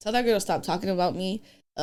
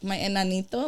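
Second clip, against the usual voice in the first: normal talking voice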